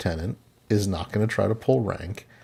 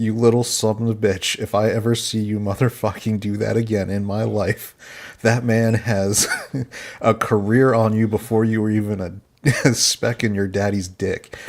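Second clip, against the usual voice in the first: usual speaking voice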